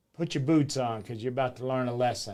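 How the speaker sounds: plain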